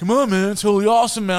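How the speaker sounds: shrill, very high, very loud shouted California surfer dude. Retelling what schoolmates expected him to say: mock california surfer dude. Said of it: "I'm not from fucking California".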